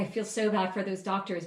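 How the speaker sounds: ordinary talk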